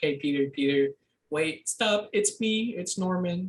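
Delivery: whiny, pleading, begging voice. Retelling the scene where the villain goes back to his normal persona: imitating Norman Osborn whining. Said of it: "he has like his whiny voice".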